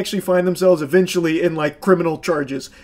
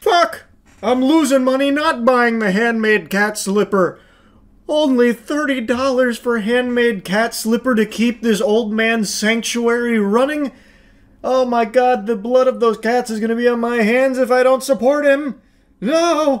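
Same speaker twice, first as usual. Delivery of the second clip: guilt-stricken fake outrage, pitched up high; 5 semitones higher than usual. Reacting to a cat shelter scam's slipper deal: sarcastic mock outrage. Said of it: "No sarcasm on this one".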